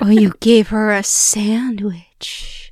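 slow, teasing whisper. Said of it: "Why are you saying it like that?".

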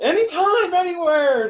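loud, very high ring-announcer call. Recalling an old wrestling saying, imitate how it was said in a loud Tony Schiavone voice. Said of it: "saying that in a loud voice".

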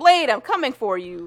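dramatic, loud, high-pitched yelling cry. Retelling a woman outside a vet clinic yelling to the sky: retelling a yell. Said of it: "she yells to the sky".

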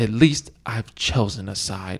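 slow, earnest, dead serious delivery. Quoting a line from X-Men three the way she does it: imitating Halle Berry. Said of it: "I could quote Halle Berry and how she does it".

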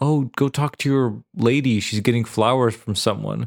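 normal talking voice

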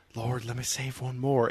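snarky, hushed stage whisper under the breath. Retelling a snarky comment made during the movie: retelling a half-whispered comment. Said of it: "I just whispered to him and just said".

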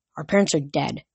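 plain reading voice

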